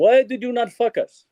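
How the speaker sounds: loud, high-pitched, put-on Greek accent. Remembering a film professor's classroom critiques, imitating his greek accent. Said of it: "with his Greek accent".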